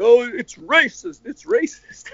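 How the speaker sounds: high, slow, mocking scream.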